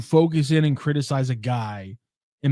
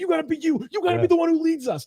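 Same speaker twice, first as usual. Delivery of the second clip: put-on screaming, higher. Describing a gif of Draymond pointing into KD's chest, imitating Draymond screaming. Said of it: "he's screaming right in his face".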